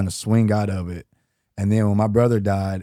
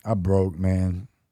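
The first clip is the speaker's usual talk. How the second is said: ordinary delivery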